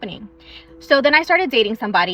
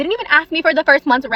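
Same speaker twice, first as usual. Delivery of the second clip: emphasized, said higher and louder with weight. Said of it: "Again, let me emphasize on that".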